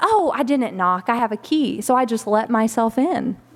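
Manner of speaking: ordinary talk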